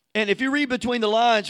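ordinary delivery

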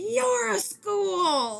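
play-acted, abrupt, very high-pitched shrill scream. Retelling a scene in which a character suddenly screams, retelling a scream. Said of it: "then all of a sudden he just screams".

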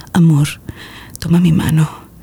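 low, sultry, seductive come-hither voice. Showing a novice listener what to say, in a sultry seductive voice. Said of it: "voz cachondota".

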